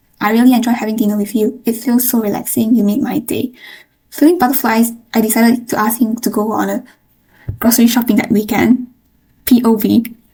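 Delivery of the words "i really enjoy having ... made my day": ordinary talk, nothing marked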